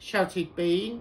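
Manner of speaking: ordinary delivery, nothing marked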